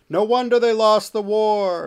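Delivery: high, loud, slow, distant heckling shout. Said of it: "shout from the distance".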